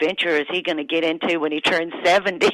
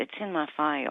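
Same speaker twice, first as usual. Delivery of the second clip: put-on mutter, quieter, slower; 10 dB quieter than usual. Retelling a patient's reply when a nurse asks his age, retelling muttering under breath. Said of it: "he said it really under his breath".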